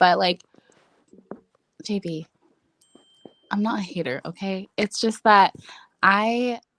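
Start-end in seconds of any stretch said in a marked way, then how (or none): 1.8-4.7 soft, quiet feminine head voice. Telling another speaker she is not a hater: soft feminine voice. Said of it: "was that your, like, feminine voice".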